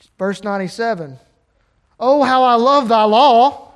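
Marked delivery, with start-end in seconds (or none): 2.0-3.5 very loud, ringing, delighted and excited exclaiming. Reading verse 97 aloud, which has an exclamation point, excited exclamation. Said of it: "why did I say it that way? That's because there's an exclamation point there".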